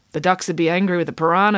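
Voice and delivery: ordinary delivery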